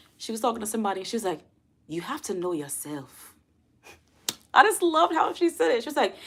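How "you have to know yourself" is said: put-on gentle Nigerian accent. Quoting a woman talking to somebody, in his best nigerian accent impression. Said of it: "that's my best Nigerian accent".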